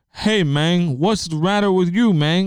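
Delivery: put-on loud, full-voiced Cuban accent. Imitating a movie character's English: Al Pacino accent impression. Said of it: "except he just has an accent".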